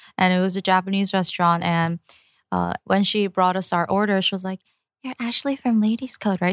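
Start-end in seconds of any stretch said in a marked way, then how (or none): 5.1-6.6 lower, whispered voice. Retelling how a restaurant server recognized them: imitating a whisper. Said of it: "She, like, kinda whispered".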